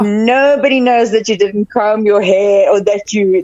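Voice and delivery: ordinary talk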